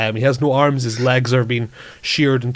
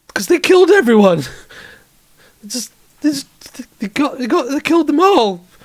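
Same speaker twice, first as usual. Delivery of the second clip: scared, frightened, much higher pitch; 14 semitones higher, 4 dB louder than usual. A distressed character answers why he is so scared, scared. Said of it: "Why are you so scared?".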